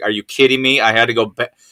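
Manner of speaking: normal talking voice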